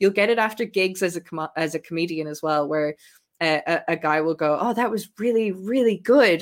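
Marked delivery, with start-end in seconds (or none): 4.6-6.4 put-on taken-aback surprise, pitched up high. Retelling a man's praise after a comedy gig: imitating a surprised tone. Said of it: "you can sense the surprise in their voice".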